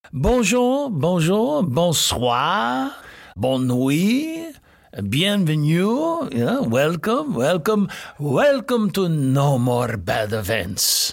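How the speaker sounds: fake, grand put-on French accent. Host opening the No More Bad Events show, in a put-on French accent. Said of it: "Why am I speaking like this?".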